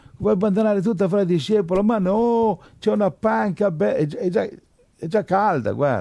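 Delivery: high-pitched, lazy, comfy-sounding mocking voice.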